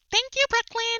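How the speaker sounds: voice pitched very high. Recapping Canada's Drag Race, the speaker imitates the winner Sumo, high-pitched. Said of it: "like with that high pitched voice".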